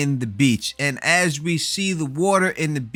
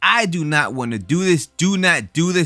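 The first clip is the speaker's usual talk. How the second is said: usual speaking voice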